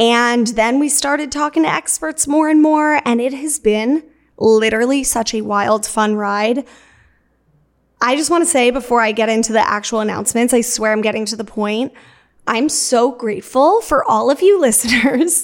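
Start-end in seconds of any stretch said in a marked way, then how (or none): 12.5-15.4 talking through laughter. Thanking listeners before an announcement, laughing while talking. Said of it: "I don't know why I'm laughing at myself".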